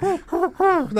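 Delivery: put-on needy dog voice. Describing how a dog reacts when kicked: pathetic dog impression. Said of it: "That's an impression of a dog".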